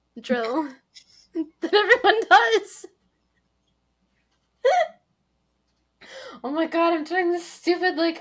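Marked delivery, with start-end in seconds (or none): 0.3-7.0 breathless wheezing laughter, higher and louder. Reacting to another speaker's remark, laughing and wheezing. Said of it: "I can't breathe thing while laughing".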